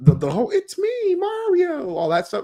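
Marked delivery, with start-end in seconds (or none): 0.5-1.9 very high pitched character voice. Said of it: "he didn't sound like that".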